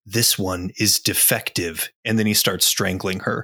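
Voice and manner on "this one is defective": leaning-in, close, secretive whisper. Narrator tells how a character leans forward to a woman, whispering. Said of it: "he leans forward and he whispers".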